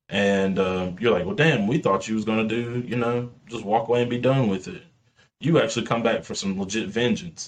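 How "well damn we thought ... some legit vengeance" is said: normal talking voice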